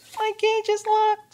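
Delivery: tiny, very high, barely-there squeaky voice. A tiny caged creature answers a player leaning down to its cage, tiny voice. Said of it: "his voice is so tiny, you can barely hear him".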